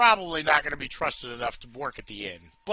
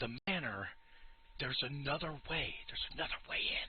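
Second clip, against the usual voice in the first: conspiratorial whisper, quieter; 16 dB quieter than usual. Voicing a character who leans close to the players: whispering NPC. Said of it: "whispering and getting real close to you guys".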